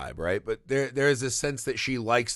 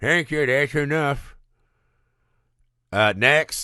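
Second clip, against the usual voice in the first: put-on elderly man's voice creeping in; 4 semitones higher, 5 dB louder than usual. Retelling an audition, quoting the voice that cuts her off: old man voice. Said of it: "that old man voice creeping in".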